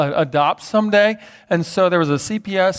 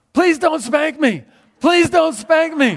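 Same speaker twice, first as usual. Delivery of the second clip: put-on, high, loud child's yell at top of lungs; 9 semitones higher than usual. Retelling a child's outburst in front of a visitor: imitating a child yelling. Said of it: "he yelled this at the top of his lungs".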